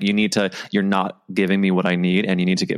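plain

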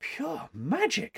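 very high and soft, said on a breath. A girl answers the woman who has just laid the sketches in order, breathed. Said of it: "breathed the girl".

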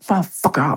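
put-on angry shout. Retelling a guard getting in his face: imitating a guard shouting in his face. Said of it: "he's in my face spitting".

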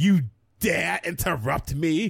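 slow, offended, affronted British hissy fit. Retelling how she reacted when interrupted, imitating a hissy fit. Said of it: "she just gets a hissy fit".

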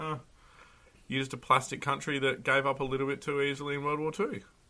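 ordinary talk, nothing marked

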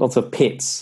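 put-on New Zealand accent, "pats" said as "pits". Asked to give it a go, retelling the Kiwi commentary: put-on Kiwi accent. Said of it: "Give it a go".

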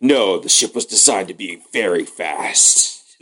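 slow, very intense, dead serious delivery. Acting out a crew member answering, very intense Battlestar Galactica delivery. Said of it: "very intensely by, like, one of the Battlestar Galactica people".

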